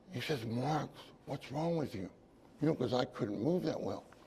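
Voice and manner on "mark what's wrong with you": whisper, quieter and slower. Recalling what the player he was guarding said to him; retelling a whisper. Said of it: "He says that he whispers to me".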